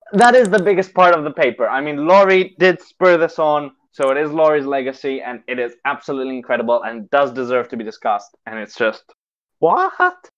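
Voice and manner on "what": cracking, very high squeak on what. Discussing the legacy behind the paper, with a voice crack. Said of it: "nice voice crack".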